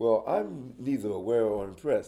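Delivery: acted haughty, smug, superior, dismissive arrogant tone. Retelling an answer given during the question and answers, imitating Stanley's arrogant tone. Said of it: "Stanley kinda sits up with his little arrogant shit".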